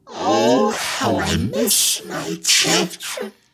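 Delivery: shrill, ear-piercing, piercing voice. Reading a story, voicing a hidden speaker in the shadows, shrill voice. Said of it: "A shrill voice pierced my ears".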